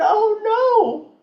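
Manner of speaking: put-on tearful crying voice. Retelling finding a house on fire, imitating own past crying. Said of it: "And I'm still crying".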